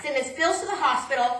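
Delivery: ordinary delivery, nothing marked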